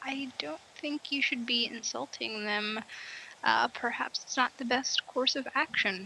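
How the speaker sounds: soft, hushed, whispered aside. Warning a companion not to insult the guards: whispering. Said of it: "I kinda whisper to Dorian".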